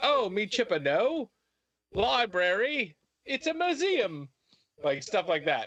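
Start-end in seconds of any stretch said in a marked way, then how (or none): 0.0-4.3 bad put-on English accent, very high, slow. Mocking how a character's English accent would sound: bad English accent. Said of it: "your English accent's gonna be like".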